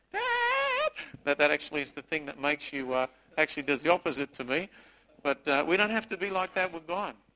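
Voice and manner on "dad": put-on very high whiny kid voice. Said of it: "the higher pitch it gets and the whinier".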